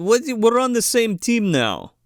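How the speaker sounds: bad fake Russian accent. Retelling a scene with Sid Haig, quoting another character in a bad fake Russian accent. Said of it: "I guess I'm doing Russian, but it's not really Russian".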